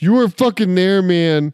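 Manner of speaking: shouting. Retelling what a guy in the va hospital pharmacy yelled: retelling a shout. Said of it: "just shouted".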